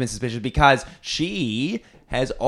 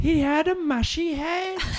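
very high-pitched put-on old grandma voice. [name], being questioned about what he saw, answers in his Nana voice. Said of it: "I hate when you do your Nana voice".

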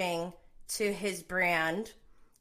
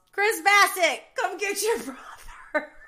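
shrill, very high, loud holler; 10 semitones higher, 5 dB louder than usual. Picturing a scene at a conference table, imitating Giselle yelling. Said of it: "and Giselle yells".

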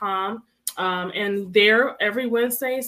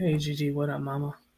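deeper-pitched voice; 6 semitones lower, 5 dB quieter than usual. Host mimics how the co-host just greeted gigi, imitating the co-host's greeting voice. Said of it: "That's how you sound".

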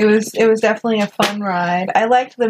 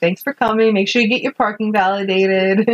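usual speaking voice

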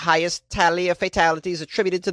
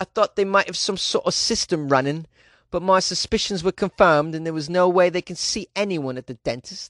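put-on British English accent; 3 semitones higher than usual. Reading aloud a patient's quote about the dentist: put-on British accent. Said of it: "How's that British accent".

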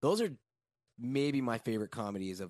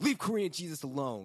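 put-on screaming voice, pitched higher; 8 semitones higher than usual. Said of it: "And he's just screaming it".

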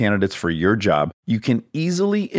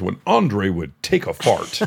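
very serious, grave broadcast announcer voice; 3 semitones lower than usual. Retelling the announcer's line again: imitating a very serious announcer. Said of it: "He's very serious".

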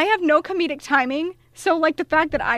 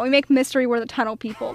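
normal talking voice

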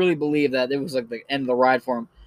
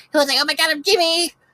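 very high-pitched, sped-up voice; 12 semitones higher than usual. Imitating Jimmy, an earlier comedy YouTube character, in a high sped-up voice. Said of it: "It was like the high-pitched voice all sped up".

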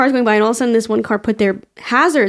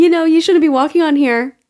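mock light and polite, high and bright voice; 6 semitones higher than usual. Retelling a golf course lady's warning: imitating a lady's big smile. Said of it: "with a big smile".

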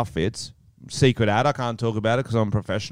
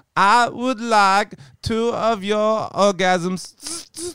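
put-on robot voice with German accent; 11 semitones higher, 4 dB louder than usual. In a bar joke skit, the robot ordering from the bartender, german robot voice. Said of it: "I am the German robot".

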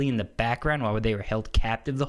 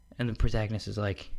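ordinary delivery

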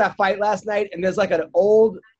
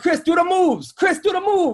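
mock Long Island accent, higher pitched; 10 semitones higher than usual. Retelling the YouTube commentary on a fight: imitating thick Long Island accent. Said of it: "very, very Long Island, like you said".

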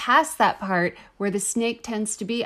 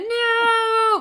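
horrified high shriek with the word no drawn out; 13 semitones higher than usual. Speaker reacting to the story being recounted, screaming. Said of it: "I'm screaming again".

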